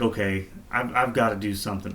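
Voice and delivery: plain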